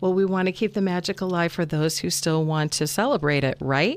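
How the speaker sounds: normal talking voice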